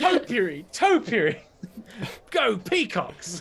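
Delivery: put-on very slow, high, sloshed drunk druid voice. Imagining a drunk druid at a garden party: imitating a drunk druid. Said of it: "a drunk druid at a garden party".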